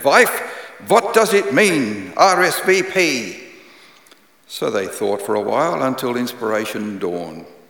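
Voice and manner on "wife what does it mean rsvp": put-on very slow, heavy, thick Eastern European accent. Telling a joke, a husband speaks to his wife in a thick eastern european accent. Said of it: "In his thick Eastern European accent".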